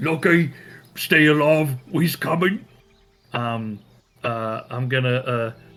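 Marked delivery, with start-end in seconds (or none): 0.0-2.6 loud urgent shouting. Voicing a character calling up to someone held high in the air: shouting in character. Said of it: "so he just shouts".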